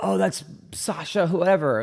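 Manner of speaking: gentle put-on Latin accent. Retelling what someone in the crowd called out, in a Latin accent. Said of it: "a Latin accent".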